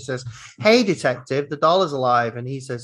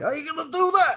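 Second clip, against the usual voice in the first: put-on New York accent, higher pitch. Repeating the detective's line from the film: imitating New York accent. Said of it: "Was it the New York accent?".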